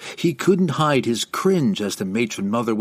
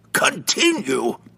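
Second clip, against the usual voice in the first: short, curt, sharp snapped delivery; 3 semitones higher than usual. Narrator reads the matron mother answering the illithid, snapped. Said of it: "snapped Benray".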